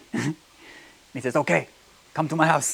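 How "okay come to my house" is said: bad, put-on, laid-on Japanese accent. Retelling a story, quoting the karate master's reply: bad Mr. Miyagi impression. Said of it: "That was a bad Japanese accent".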